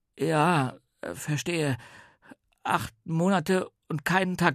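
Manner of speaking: sheepish murmur. Narrator reads a character's reply once the grin is gone, very meek mutter. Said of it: "sehr kleinlaut und murmelte".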